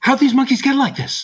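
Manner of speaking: very high-pitched voice. Doing the one movie line they can do well, Mark Wahlberg impression. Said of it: "I can really only do like one Mark Wahlberg line well".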